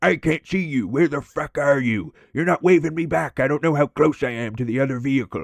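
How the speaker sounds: mock irritated yelling. Retelling a coworker yelling from the van window: imitating someone yelling. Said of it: "starts yelling".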